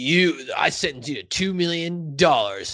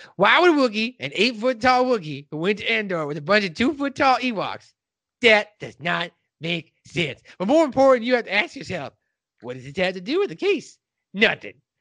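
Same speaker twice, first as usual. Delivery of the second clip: showy, put-on lawyer voice, pitched up; 6 semitones higher than usual. Retelling a lawyer's Chewbacca defense argument, in a courtroom lawyer impression. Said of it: "when you're doing that voice".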